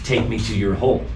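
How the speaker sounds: ordinary talk, nothing marked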